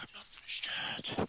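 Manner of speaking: breathy whisper, very close, right at the ear. Voicing an attacker who speaks right in a character's ear: whispered in your ear. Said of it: "in your ear, so he's like".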